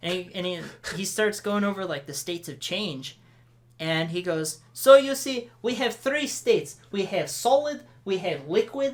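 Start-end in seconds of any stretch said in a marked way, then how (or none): 4.7-8.9 wobbly, high-pitched, bad attempted Russian accent. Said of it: "That's not sounding Russian at all".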